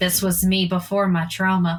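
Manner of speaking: whispering under breath. Playing Remy, a character commenting on another, whispering under her breath. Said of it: "Remy whispers under her breath".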